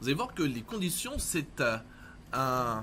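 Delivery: announcer-style radio host voice.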